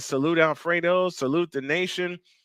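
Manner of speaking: usual speaking voice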